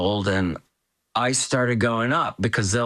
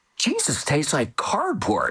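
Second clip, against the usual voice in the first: bold, blurted delivery with big pitch swings; 4 semitones higher than usual. Retelling what she blurted with the thing in her mouth, very loudly. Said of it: "she said very loudly".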